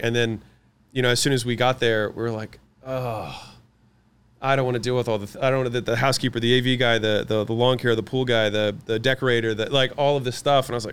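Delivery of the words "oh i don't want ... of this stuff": ordinary talk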